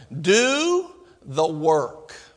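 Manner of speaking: slow, deliberate, drawn-out, spaced-apart words. Preaching, repeating a key line to drive it home: slowed down. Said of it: "let me slow it down".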